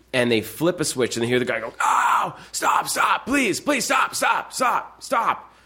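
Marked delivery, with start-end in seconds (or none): 1.8-5.3 acted very high, drawn-out, desperate pleading cry. Acting out a man in an experiment begging them to stop, retelling a screamed plea. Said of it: "but he's screaming there".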